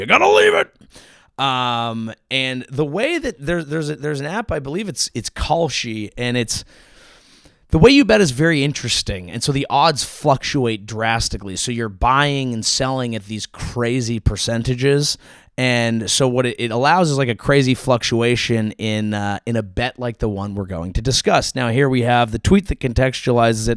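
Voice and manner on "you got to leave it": very high, loud yelling. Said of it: "just yelling at a dog".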